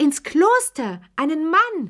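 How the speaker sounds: very high, shrill, drawn-out shriek. Hearing the mute child's words, a woman reacts, shrieking. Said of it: "kreischte Charlotte Pelou".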